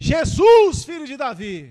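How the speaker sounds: very slow, loud, drawn-out, swooping shout. Retelling a Bible story, the blind man shouting again: imitating shouting louder. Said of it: "Gritou mais alto".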